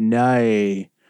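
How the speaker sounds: Australian accent, no pronounced as nay. Saying the word no in an Australian accent: Australian accent on 'no'. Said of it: "I'll say the word no in an Australian accent".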